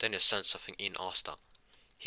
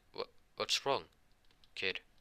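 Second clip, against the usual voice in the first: plain reading voice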